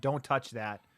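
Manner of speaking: plain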